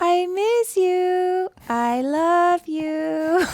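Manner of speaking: stilted, awkward, very high, very slow delivery. Imitating mom's voice message to her child: imitating mom's awkward voice message. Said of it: "this awkward, you know, slight pause at the beginning".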